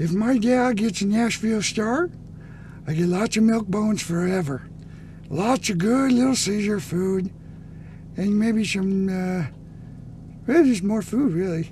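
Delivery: pet dog's voice, pitched very high. The speaker talks as their dog, in a dog voice. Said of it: "That's my dog voice".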